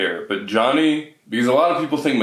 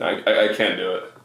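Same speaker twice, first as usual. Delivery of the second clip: ordinary talk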